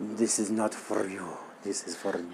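put-on Italian woman faking Spanish accent. Imitating how a woman on screen sounds: Italian mafia woman voice. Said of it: "sound like she's an Italian woman trying to be Spanish".

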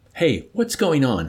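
scared, begging. Amid a raucous commotion, a man asks what is going on, pleading. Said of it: "Hungry Joe pleaded".

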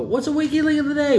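really loud, very high shout. Recalling calling out to a fellow tech so the whole shop hears, retelling a loud call. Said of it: "Really loud".

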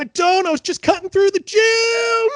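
loud, high-pitched yelling.

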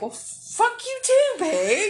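loud, shrill, swooping hollered yell. Retelling a long drive, the speaker re-enacts yelling at a pig in the road. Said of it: "me yelling at this pig".

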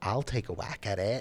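put-on plain, ordinary American accent, not posh. Quoting Hallie's film line in Hallie's American accent. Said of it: "American accent".

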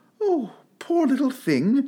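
coaxing tone, pitched very high. Speaking up to an enormous puppy reaching out a paw; coaxing tone. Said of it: "said Alice in a coaxing tone".

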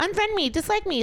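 high-pitched, sassy, dismissive delivery.

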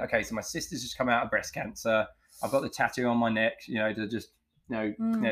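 ordinary talk, nothing marked

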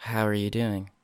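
nice, soft, smooth radio-announcer voice. Showing the soft radio voice the speaker used to use: soft NPR radio voice. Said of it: "this nice little soft tone. This NPR public news radio".

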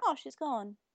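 mock offhand, untroubled, casual tone. Retelling how a dub changed a crying character's tone: imitating Palmon's unbothered tone. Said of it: "the tone changes".

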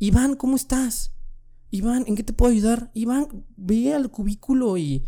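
high, sweet teacher-like voice.

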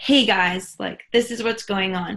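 normal talking voice

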